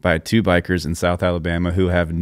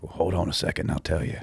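whispered, hushed, breathy tough-guy voice; 8 dB quieter than usual. Retelling what a biker at the bar answered: imitating a tough guy. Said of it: "in this tough guy way".

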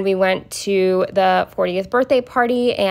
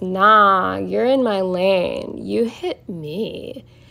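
put-on drunk man voice. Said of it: "who was clearly drunk".

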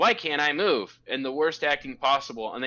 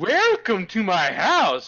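high, drawn-out, over-the-top, hammy witch voice; 6 semitones higher, 5 dB louder than usual. Retelling how the witch greets them in the film: imitating overacted witch line.

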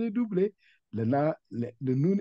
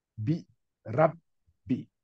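brief cut right after rab. French reading lesson on a doubled letter, short break after rab. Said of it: "J'ai dit rab et j'ai coupé pour montrer que la lettre qui vient, elle est doublée".

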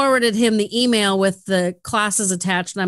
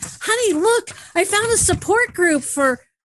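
thrilled, high, swooping sing-song delivery; 11 semitones higher than usual. Retelling showing a found flyer to her honey: retelling own excited words. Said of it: "I was so excited".

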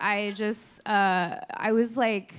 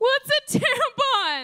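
mock wailing cry, very high; 4 dB louder than usual. Retelling her own past reply to a woman's answer, re-enacting a wail. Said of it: "To which I just wailed".

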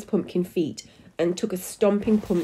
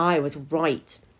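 plain reading voice

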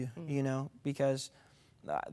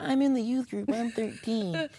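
tiny, high, squeaky little voice; 9 semitones higher, 3 dB louder than usual. Retelling proving age to join the youth group: imitating own little pipsqueak voice. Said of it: "little pipsqueak voice".

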